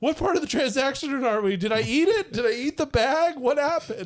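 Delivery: dazed, bewildered stoner voice, whimpered high and lost. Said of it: "he just realizes".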